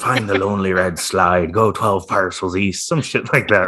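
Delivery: put-on swashbuckling pirate captain voice. Recalling voiceovers done for a stream episode, in a pirate voice. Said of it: "I had this like pirate voice going on".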